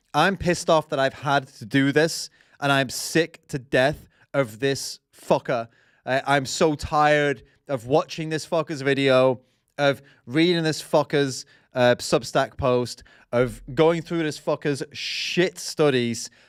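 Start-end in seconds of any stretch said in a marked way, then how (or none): none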